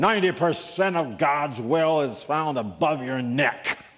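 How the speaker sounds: rough-voiced, gruff, plain, matter-of-fact delivery. Retelling an anecdote, quoting Dr. Barnhouse in his gruff voice. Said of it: "in his gruff voice".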